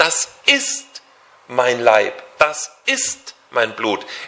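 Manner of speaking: IST stressed hard and slowed.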